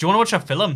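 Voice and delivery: put-on Northern Irish accent, loud and high. Showing how the word film sounds: put-on northern irish accent. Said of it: "said in a Northern Irish accent".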